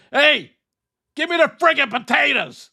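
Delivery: mock irritable, high-pitched angry shouting. Imagining the co-host at home having dinner: imitating JD hollering angrily. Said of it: "Can you imagine him home having dinner saying".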